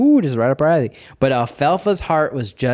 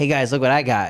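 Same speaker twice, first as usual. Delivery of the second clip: put-on croaking kid voice. Describing the kind of kid who shows off a frog, sounding like Froggy. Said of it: "you sounded like Froggy when you said".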